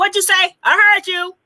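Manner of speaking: high, loud, snapped-back, knowing tone. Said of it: "I got them mother ears".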